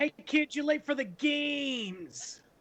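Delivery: high wise-guy voice, "games" stretched. Tell a kid he is late for the games, in a Danny DeVito impression. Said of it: "Danny DeVito".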